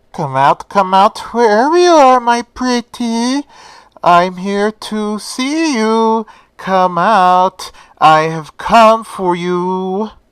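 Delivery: loud, muffled voice. Retelling a story, voicing a masked killer searching a dark station: muffled killer voice. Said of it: "with his voice being muffled by his skull mask".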